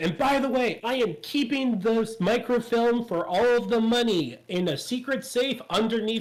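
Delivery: loud, high declaration, projected widely. Recounting how a man told everyone in earshot where the microfilm was, retelling a loud announcement. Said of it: "He just loudly goes".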